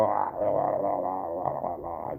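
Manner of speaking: put-on drunken slurring. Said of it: "slurring my words".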